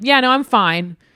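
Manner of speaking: mock sarcastic, bitter tone. Describing how the music feels, imitating a sarcastic, bitter reply. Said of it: "it's sort of like when someone's like".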